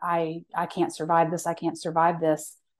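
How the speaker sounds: imitated sobbing, crying voice. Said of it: "I'm just sobbing and saying".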